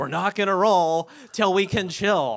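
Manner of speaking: all-out loud yell. Speaker recounting what they shouted at a group of people, retelling a yell. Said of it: "And I'm yelling".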